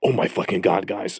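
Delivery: put-on panicked voice. Retelling roommate Justin rushing out of his bedroom over the bills: imitating Justin panicking. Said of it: "he walks out of his bedroom and he's like panicking".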